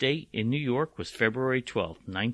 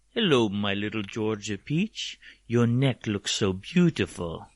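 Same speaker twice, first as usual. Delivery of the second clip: put-on vampire count voice. Greeting someone in a spooky bit to scare them: Dracula impersonation. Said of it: "my Dracula impersonation".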